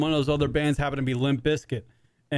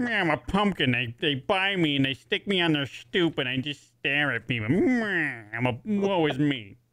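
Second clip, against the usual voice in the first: put-on old-time 1950s gangster voice. Giving the pumpkin a voice and speaking as it: 1950s gangster voice. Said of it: "sounds like some sort of like nineteen fifties gangster".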